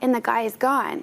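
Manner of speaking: ordinary talk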